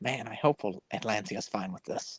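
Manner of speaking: muttered aside under the breath. In a roleplay game, a character walking away mutters under breath. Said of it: "I'm going to mutter under my breath".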